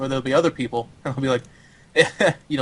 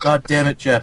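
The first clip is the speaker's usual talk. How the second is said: mock annoyed, angry voice. Retelling a fellow player's angry reply: imitating him getting angry. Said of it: "And he'd be like".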